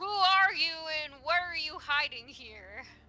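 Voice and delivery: voice booming out. A player speaks as their character, using magic, in a booming voice. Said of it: "make my voice boom and be like".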